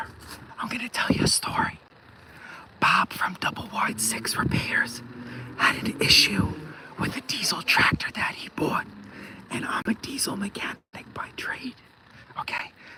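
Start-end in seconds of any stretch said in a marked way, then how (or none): 0.6-11.7 soft, hushed whisper. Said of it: "I'm gonna whisper".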